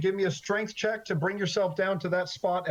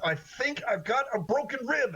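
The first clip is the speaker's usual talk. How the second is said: words pushed through a clenched jaw, gritted teeth; 4 semitones higher than usual. An injured woman being lowered down speaks to her rescuer through gritted teeth. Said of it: "She talks to you through gritted teeth".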